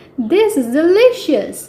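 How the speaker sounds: high voice, chuckling through the line. Reading a story aloud, the children speak at breakfast, chuckling. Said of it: "chuckled the children".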